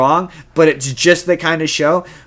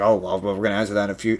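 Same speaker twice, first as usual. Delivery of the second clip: smug, self-important, pretentious, arrogant, acted-out tone; 7 semitones lower, 8 dB quieter than usual. Mocking a creator dodging questions about the next season: mocking a pretentious, arrogant answer. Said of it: "makes you sound pretentious and arrogant".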